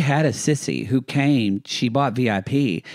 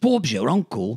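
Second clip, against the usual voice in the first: put-on Australian accent. Co-host saying the phrase again after being asked not to, Australian accent. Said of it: "It's even in an Australian accent".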